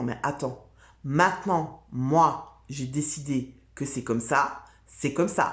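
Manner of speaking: caricatured, very masculine, firm, forceful tone. Showing how to embody one's masculine side, in a caricatured very masculine assertive tone. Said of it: "sur un ton très masculin".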